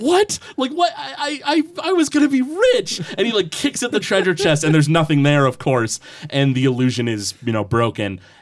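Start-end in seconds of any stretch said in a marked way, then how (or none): 0.0-3.0 very high, slow, flabbergasted, bewildered goblin voice. Voicing a goblin who finds the treasure chest is an illusion: flabbergasted goblin voice. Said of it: "just completely flabbergasted".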